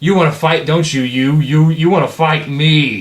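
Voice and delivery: furious taunting monster voice. A narrator voices the creature as it shifts and turns: furious Big Bones voice. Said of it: "gets all super pissed off".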